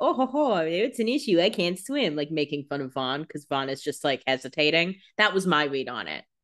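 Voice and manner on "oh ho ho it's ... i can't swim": slow, laid-on fake Scottish accent. Retelling a scene between Vaughn and Damon, in Damon's fake Scottish accent. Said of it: "in a fake Scottish accent to be like".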